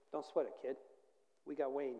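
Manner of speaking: ordinary talk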